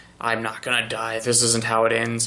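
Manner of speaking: mumbling under his breath. Describing a scene, the speaker voices a man on one knee: muttering to himself. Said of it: "but he's muttering to himself".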